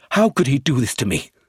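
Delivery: shocked, humiliated, emotional outburst. Reading a man's line as his emotions break through for the first time, exclaimed. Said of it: "he exclaimed".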